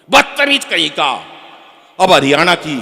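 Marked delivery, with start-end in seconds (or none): 0.1-1.1 very loud, haughty, snooty scolding tone with attitude. Imitating how a girl from each city answers a boy, Delhi girl with attitude. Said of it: "Delhi वाली थोड़ी attitude वाली".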